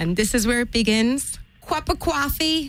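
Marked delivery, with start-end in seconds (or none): 1.6-2.7 put-on New York accent. Pop-up challenge to impersonate an american accent: put-on new york accent. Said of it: "best impersonation of an American accent".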